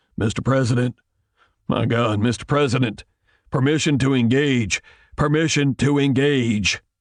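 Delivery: croaking voice heard over speakers. A general speaks to the president over the speakers, in a croaking voice. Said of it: "General Zetter's voice croaked from the speakers".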